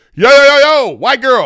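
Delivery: booming, very loud shouting holler. Acting out security stopping her in the hotel: imitating the security guard. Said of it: "security is like".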